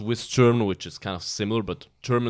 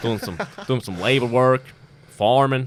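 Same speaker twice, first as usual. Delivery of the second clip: loud put-on American accent, pushed out; 3 semitones higher, 5 dB louder than usual. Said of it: "a little bit of Bryce Mitchell accent".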